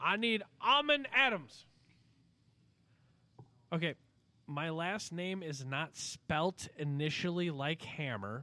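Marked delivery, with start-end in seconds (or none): 0.0-1.6 put-on speech impediment, man's voice, pitched higher. Acting out a man who calls a name and says Armin for airman, imitating his speech impediment. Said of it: "a gentleman who has a speech impediment".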